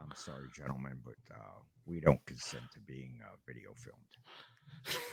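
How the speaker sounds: very quiet, puffed-up manly voice. Retelling how a man puffed out his chest to speak, in a puffed-up man voice. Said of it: "he gets his man voice".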